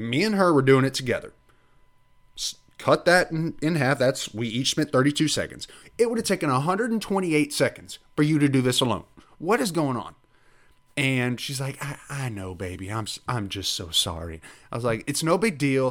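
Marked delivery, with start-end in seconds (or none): 11.8-14.4 put-on Southern accent, soft elderly lady voice. Retelling what she said while they worked together: imitating an old southern lady. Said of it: "She turned into I'm an very old Southern al- lady".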